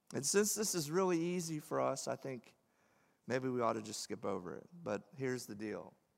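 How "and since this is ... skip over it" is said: dry, ironic sarcastic aside. Speaking to listeners about the words of Jesus, sarcastically. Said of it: "I'm being sarcastic".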